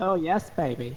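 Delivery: showy, flamboyant, high-pitched delivery. Giving a sound check when asked, in a flamboyant voice. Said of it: "It's flamboyant".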